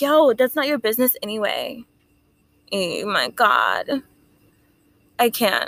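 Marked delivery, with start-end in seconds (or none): none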